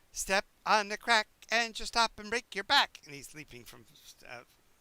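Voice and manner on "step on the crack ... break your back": put-on very high, very loud squealing child voice. Voicing Gurgi leaping from step to step: Gurgi, a four-year-old character. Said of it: "you can hear Gurgi going".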